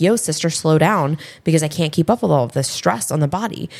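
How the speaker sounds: normal talking voice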